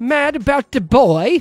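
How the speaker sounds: put-on British accent, very loud and high. Host announcing the next movie title on a review show: British accent. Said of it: "I thought that was a pretty good British accent".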